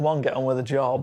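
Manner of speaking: plain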